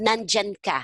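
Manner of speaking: normal talking voice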